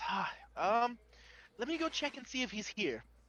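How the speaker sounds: disappointed, deflated, high, halting voice. Voicing a clerk whose clipboard slumps as he answers: disappointed. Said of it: "he's, like, disappointed".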